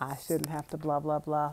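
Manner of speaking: ordinary talk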